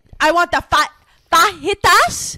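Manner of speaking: very loud, very slow, drawn-out, overdone delivery. Comparing a sound to people ordering: imitating someone ordering in Spanish. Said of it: "something about your delivery that was giving problematic".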